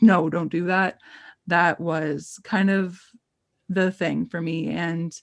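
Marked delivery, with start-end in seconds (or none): 0.0-1.0 put-on booming, frightening angry voice, slower. Describing how dad sounded when he got mad, imitating dad's booming, frightening voice. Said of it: "that booming, like frightening voice when dad gets mad".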